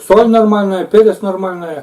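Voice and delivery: talking with mouth full. Tasting the dish and answering about the pepper, talking with mouth full. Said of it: "У меня полный рот".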